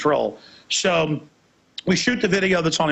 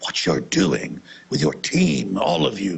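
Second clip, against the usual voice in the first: deep, very low put-on British accent; 7 semitones lower than usual. Retelling what a female restaurant worker came over and said, put-on British accent. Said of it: "in a British voice".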